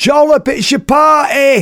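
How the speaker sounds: very high, drawn-out yell at top of voice. Retelling a children's show, imitating someone shouting from the audience. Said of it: "shouts out at the top of his voice".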